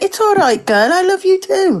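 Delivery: put-on Welsh voice. Quoting what he said as his girlfriend walked off, in an accidental welsh accent. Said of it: "That sounded more Welsh".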